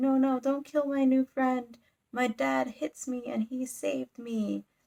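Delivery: put-on sobbing, tearful little girl voice, pleading tone. Retelling a story scene where a little girl begs, imitating a crying girl. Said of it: "immediately starts crying".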